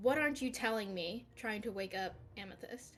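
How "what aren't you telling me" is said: speaking loudly in character. Voicing a character trying to wake a sleeping friend: speaking loudly in character. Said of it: "she's going to kinda loudly say".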